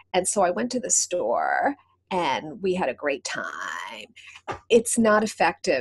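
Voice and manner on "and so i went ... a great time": low, croaking, creaky vocal fry, drawn out. Demonstrating how the vocal fry pattern sounds in a sentence: vocal fry. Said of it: "vocal fry, and vocal fry is a very low register sound or pitch. They also call it croaking. ... so it sounds like this".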